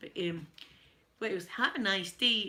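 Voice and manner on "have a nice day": terrible, slow, put-on American accent. Showing off his american accent, bad american accent. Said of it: "I apologise to my American friends".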